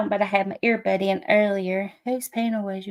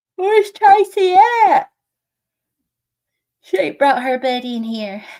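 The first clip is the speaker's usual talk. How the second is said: higher and louder, talking through a yawn; 6 semitones higher, 7 dB louder than usual. Greeting viewers in the chat, yawning while talking. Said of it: "I'm sorry I'm yawning".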